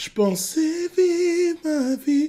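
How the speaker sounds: slack, airy, breathy voice, very high and very slow. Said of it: "les cordes vocales sont vraiment en position molle".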